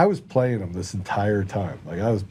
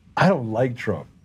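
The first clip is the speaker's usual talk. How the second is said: ordinary delivery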